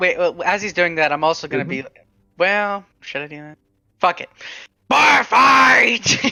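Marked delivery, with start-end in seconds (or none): 4.9-6.2 raspy, rough, loud, drawn-out yelled battle cry. A player announces their character's yell as a bar fight starts: yelled. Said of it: "I'm gonna yell".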